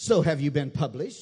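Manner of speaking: loud, patronizing, put-on talking-down tone. Retelling what a woman asked him about being published, mock-condescending. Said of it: "she very condescendingly said".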